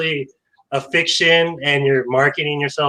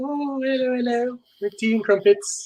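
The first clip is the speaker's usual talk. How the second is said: put-on English accent with voice lifted higher; 9 semitones higher, 3 dB quieter than usual. Joking about an author's charm: Joanna Penn English accent. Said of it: "It might be the English accent, like".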